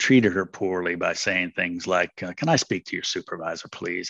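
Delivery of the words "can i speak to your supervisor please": mock condescending, dismissive tone. Recalling how they treated a woman poorly, mock-condescending dismissive tone. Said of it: "And that tone of voice, like, I'm dismissing you now".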